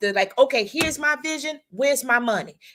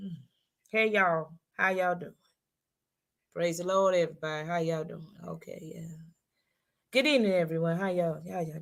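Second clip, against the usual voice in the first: joyless, rushed, unenthused emcee-style delivery; 8 semitones lower, 8 dB quieter than usual. Imitating a master of ceremonies who comes on stage not looking happy: imitating an unexcited, unhappy emcee. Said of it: "they don't look excited".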